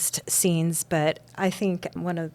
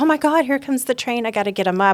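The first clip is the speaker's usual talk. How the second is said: play-acted, fast, frantic, scrambling alarm; 6 semitones higher, 4 dB louder than usual. Retelling a woman's thoughts as a train comes, mock-frantic panic. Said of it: "And that she's frantic".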